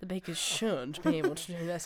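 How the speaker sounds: put-on judgmental, disapproving, faultfinding tone. Imitating how she talks about what the bakers should do, mock-judgmental tone. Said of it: "in that like kind of judgmental tone where she's like".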